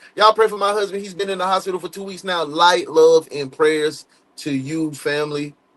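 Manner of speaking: ordinary delivery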